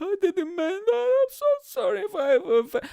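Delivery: very high, loud, fake tearful blubbering. Imagining a tearful celebrity apology after being canceled: mock crying apology. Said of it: "and they're all crying, like".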